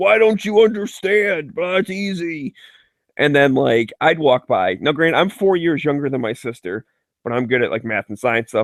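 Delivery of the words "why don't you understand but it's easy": high, frustrated, exasperated father's yelling. Recalling their dad teaching their sister math, the speaker retells his yell. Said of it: "He'd be yelling at her".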